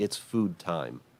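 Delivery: put-on soft, robotic little child voice. Quoting how they ask for food instead of just asking, in a monotone. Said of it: "they're very monotone".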